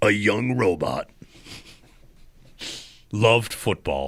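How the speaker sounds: deep, epic movie-trailer voiceover narration. Joking with a co-host about a Cletus origin story movie, in movie trailer guy voice. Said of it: "with the movie guy voice".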